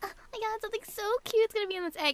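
giddy, high, fast excited gush. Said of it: "You're like".

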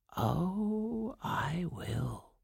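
soft half-whisper with oh stretched long. The old woman answers Aurora's thanks, half-whispered. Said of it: "whispered the old woman".

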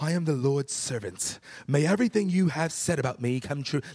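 put-on grand, majestic delivery. Recounting how the group read Mary's reply to the angel, retelling a majestic reading. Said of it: "we kind of read that very like majestically".

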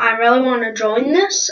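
ordinary talk

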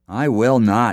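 sharp snapped reply. The miller turns down a lass who asks him to grind grain late: snapped. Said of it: "snapped the miller".

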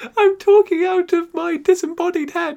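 high squeaky voice.

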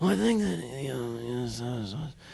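mock very soft, out-of-breath talk, acted style. Imitating an actor talking on Kimmel: imitating breathless actor. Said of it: "he really talks that way".

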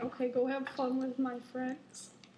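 ordinary talk

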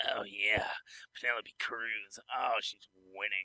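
very quiet, hushed, creepy undertone. Asked by a co-host to do the creepy voice, answering in creepy voice. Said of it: "Do your creepy voice and say".

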